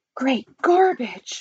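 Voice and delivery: sudden, cried-out exclamation. The president, on the phone, before slamming it down; cried out. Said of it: "cried the president".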